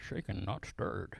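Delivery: whispered, breathy delivery. Giving a second sermon title: Sean Connery voice. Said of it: "in my best Sean Connery voice".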